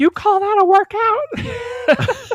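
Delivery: mock drill-sergeant yell, very high, loud, drawn-out. Retelling how Richard yelled at someone during a workout: imitating Richard yelling loudly. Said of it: "just profane and just loud".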